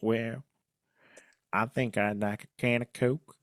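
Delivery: put-on North Carolina accent, soft and quiet. Speaker imagines Velma asked for her last meal, Velma in North Carolina accent. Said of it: "am I doing a good North Carolina accent?".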